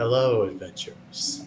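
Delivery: many voices whispering together. Narrator voicing a being greeting adventurers from all around in the trees: many whispery voices. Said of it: "in a multitude of like whispery like voices".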